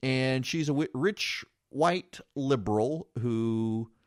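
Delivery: slow, deliberate, careful delivery, each word placed. Radio host commenting on a tape of a woman cussing at cops, said slowly. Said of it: "I had to say that slowly".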